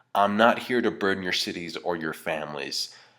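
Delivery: normal talking voice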